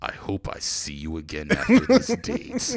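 dramatic, swooping anime narrator episode-announcer voice. Showing how any sentence sounds in the Dragon Ball Z narrator voice. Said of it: "say anything in that voice".

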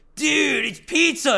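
very high, rough, scratchy character voice. Joking about a comic's last surviving turtle: Michelangelo voice. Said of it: "He's gonna be like".

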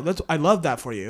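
offhand, dismissive. Reacting to someone sharing what their favorite is; dismissive. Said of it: "That sounded very like dismissive".

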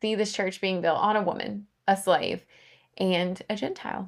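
voice choking up with tears. Teaching a bible lesson, the speaker is tearing up. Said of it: "I'm tearing up if you can't hear it".

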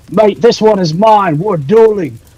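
very high-pitched, very loud yell. Declaring a character's challenge before jumping into a fight: yelling in character. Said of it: "he's gonna yell".

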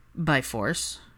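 drawling, slow, drawn-out and unhurried. Reading a story aloud, Draco answers Hermione's question, drawled. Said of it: "Draco drawled".

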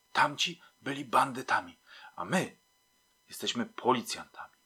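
hushed whispering. A fellow policeman at a door in a sleeping tenement answers the narrator, whispering. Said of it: "także szeptem".

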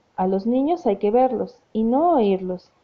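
plain reading voice

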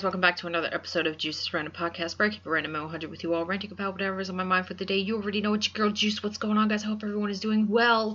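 rushed, rattled-off delivery at very fast breakneck speed. Podcast host opening a new episode for listeners, very fast talking. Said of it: "I did that really fast".

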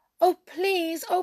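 begging tone. Narrator reads the princess answering the king's refusal, begging. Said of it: "she begged".

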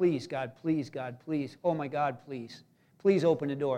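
put-on pleading voice. The speaker reenacts praying to god in a hard time, acting out begging. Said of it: "we were begging God".

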